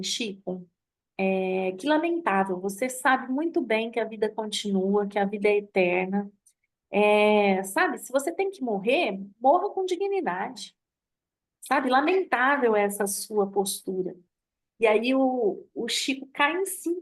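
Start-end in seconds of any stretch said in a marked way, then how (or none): none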